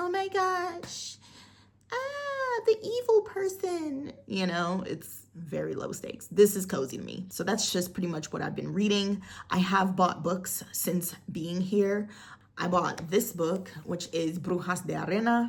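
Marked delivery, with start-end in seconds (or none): 0.0-4.1 put-on very high, slow, drawn-out teen girl voice. Summing up a book's low-stakes plot, imitating a teenage girl. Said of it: "a teenage girl going through her teenage girl things".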